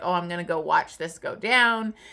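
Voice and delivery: ordinary talk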